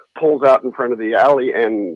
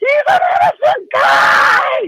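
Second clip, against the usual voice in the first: woman's very high, swooping, shrieked scream; 4 dB louder than usual. Retelling a fight by a car, imitating a woman screaming inside it. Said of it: "there's a woman screaming inside the car".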